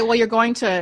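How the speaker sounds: put-on Netherlands accent. Retelling what a colleague says to her: imitating Hazel's Dutch accent. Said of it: "she'll say it in the, like, the Netherlands".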